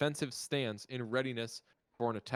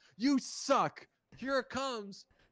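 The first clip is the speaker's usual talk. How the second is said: put-on trash-talk yelling, pitched higher; 12 semitones higher than usual. Imagining a quarterback yelling at the defense: imitating Philip Rivers yelling. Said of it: "yells at the defense".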